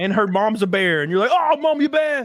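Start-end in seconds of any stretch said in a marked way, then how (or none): 1.3-2.3 put-on very high, pitched-up Scottish accent. Telling someone they sound like a character from Brave: Merida Scottish accent. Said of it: "you sound just like Merida from Brave".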